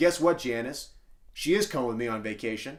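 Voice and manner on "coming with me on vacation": ordinary talk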